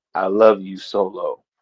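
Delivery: barely audible, very quiet, slow unhurried murmur. Retelling a line spoken to Solo: very quiet, imitating Jacob Fatu. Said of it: "Jacob just starts smirking and very quietly".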